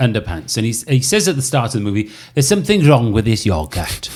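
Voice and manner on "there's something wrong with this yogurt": put-on Welsh accent. Retelling a scene from Notting Hill: Welsh accent as Spike. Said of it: "Spike is Welsh".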